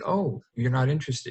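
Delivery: mock mildly surprised and fascinated, curious tone. Retelling a reply to a gentleman not interested: imitating own surprised reply. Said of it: "Just very".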